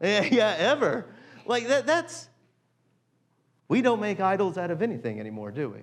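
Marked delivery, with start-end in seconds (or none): 3.7-5.8 openly sarcastic, swooping sing-song tone. Preaching about making idols, then admitting it: sarcastic. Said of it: "I'm being sarcastic".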